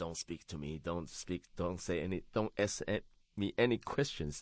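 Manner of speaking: plain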